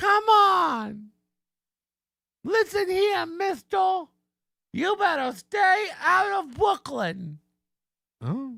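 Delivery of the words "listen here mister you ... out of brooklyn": put-on tough-woman voice, higher. Mocking an actress's line, mock tough woman voice. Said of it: "You're so believable as a tough woman".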